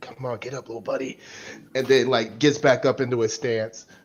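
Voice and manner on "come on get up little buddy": very quiet, hushed half-whisper. Describing a character dropping to a knee mid-fight, half-whispering. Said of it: "as he whispers over the thing".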